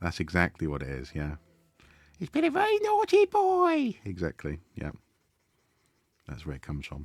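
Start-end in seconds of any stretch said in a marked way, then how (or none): 2.2-4.0 put-on very high, shrill old lady voice. Explaining where the voice comes from, giving the line in Monty Python old lady voice. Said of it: "old lady voice".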